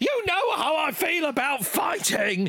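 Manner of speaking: very high, frantic, hysterical squawking shout. Recapping a story where Dad Tom sees his son has been fighting, squawking as Dad Tom. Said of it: "he squawks".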